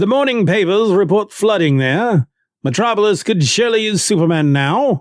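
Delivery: bad put-on British accent. Speaker retells a Batman scene, quoting Alfred in a bad British accent. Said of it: "Not a very good British accent".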